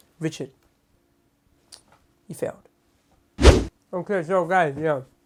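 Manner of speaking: speaking with mouth full, chewing. Speaker addressing the audience between arguments: talking while eating a biscuit. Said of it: "sorry, I was eating a biscuit".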